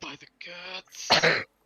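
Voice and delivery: muttered quietly under breath. Voicing a character reacting to fled workers, under his breath. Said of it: "under his breath is like".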